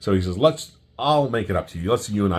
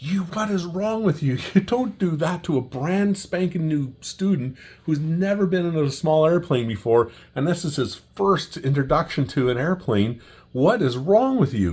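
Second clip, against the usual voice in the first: mock very high, scolding, screaming rant; 9 semitones higher than usual. Retelling how a flight school boss screamed at an instructor: imitating someone screaming. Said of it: "you can hear him screaming at him".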